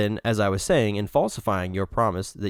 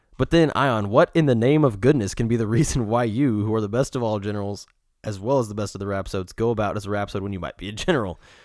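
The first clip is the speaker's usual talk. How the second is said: ordinary talk, nothing marked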